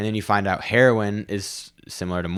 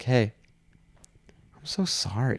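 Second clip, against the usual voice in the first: put-on slow, calm voice, higher; 4 semitones higher, 4 dB quieter than usual. Retelling answering a yelling customer: imitating own slow, peaceful voice. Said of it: "I just came at her with this slow, peaceful".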